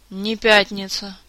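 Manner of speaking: groaning. A narrator reads Kantor, barely able to stand, answering his majesty, moaning. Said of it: "простонал Кантор".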